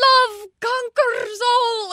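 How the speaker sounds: very high, chirpy cartoon hen voice, strange accent. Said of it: "in her very, like, I don't even know what accent she has".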